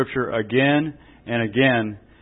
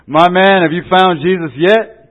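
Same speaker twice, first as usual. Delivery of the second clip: put-on very loud, harsh, pitched-up voice; 6 semitones higher, 8 dB louder than usual. Telling a joke, quoting the preacher to the old drunk in a harsh tone. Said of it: "in a harsh tone".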